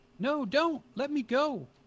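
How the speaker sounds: very high-pitched, loud woman's scream. Game master voicing a woman heard nearby while her scream continues, woman yelling. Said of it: "you can hear the woman is yelling".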